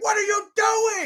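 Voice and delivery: mock, high-pitched, angry, pissed-off shout. Recounting a basketball game where he shouted at them, imitating him yelling. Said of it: "he's like yelling".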